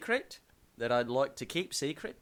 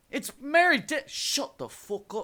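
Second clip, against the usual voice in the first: high, loud fake British accent; 11 semitones higher, 6 dB louder than usual. Acting out a man's reply in a retold story, with a put-on british accent. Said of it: "that's British".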